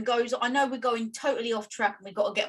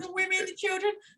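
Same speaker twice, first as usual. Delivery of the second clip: put-on weepy, sorrowful, tearful woman's voice, pitched up; 8 semitones higher, 4 dB quieter than usual. Doing an impression of a woman answering an interviewer, imitating a woman crying. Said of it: "can I do an impression?".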